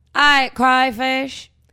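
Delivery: put-on Louisiana accent. Co-hosts discuss the Louisiana drawl; one says a word in a Louisiana accent. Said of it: "That's my Louisiana".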